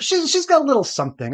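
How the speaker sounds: high, lilting put-on continental voice.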